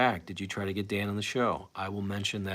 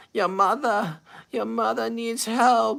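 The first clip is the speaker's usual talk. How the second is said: shrill, very high, loud pleading voice; 8 dB louder than usual. Trying out the mom impression Howard does: Ray Stern impression. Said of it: "I've never tried to do the Ray Stern, uh, impression".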